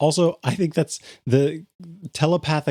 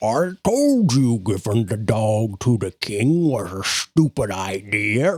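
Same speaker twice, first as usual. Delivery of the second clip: low, gurgling frog-creature warrior voice; 5 semitones lower than usual. Storyteller voices one of the Bullywug warriors approaching on a path, gurgling Bullywug voice. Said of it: "gurgling voices".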